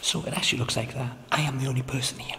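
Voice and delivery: quiet whispering. Alone in a dark place, filming: whispering. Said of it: "And I'm still whispering".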